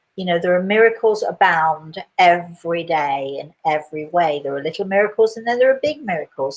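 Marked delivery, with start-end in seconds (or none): none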